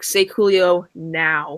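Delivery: menacing, hard-pushing, threatening tone. Retelling a TV scene where Andy threatens Dwight: imitating Andy threatening. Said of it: "threatening him".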